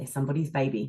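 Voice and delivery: very calm, soft, hushed voice. Retelling what a grandmother would say about anyone: imitating grandma speaking calmly and quietly. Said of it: "would just very calmly and very quietly go".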